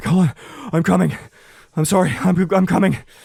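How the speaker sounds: words gasped between pants. Narrating the scene, the narrator gives the held character's line, Neil panting while talking. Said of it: "Neil's just panting like".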